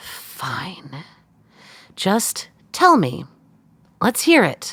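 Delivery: resigned, defeated, giving-up tone with swooping pitch. Cut off mid-argument, giving in and letting the other speak, defeated.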